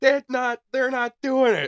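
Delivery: put-on angry little kid's very high yell. Retelling a baby son's first trick-or-treating at a dark house: imitating a child's angry yell. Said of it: "angry, yelling, like, at us".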